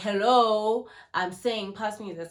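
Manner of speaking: mock loud, slow, deliberate, sharp snap. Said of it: "snap at me".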